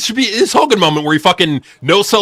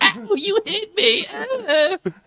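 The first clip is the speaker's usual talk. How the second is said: mock very high, very slow, drawn-out blubbering; 6 dB quieter than usual. Joking that the wrestler loses a fight: mock crying as CM Punk. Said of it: "Punk will just be crying on the floor".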